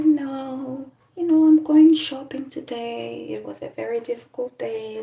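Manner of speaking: serene gentle tone. Telling a story about a neighbor who always talked in one tone; imitating a calm neighbor. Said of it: "she used to talk like this".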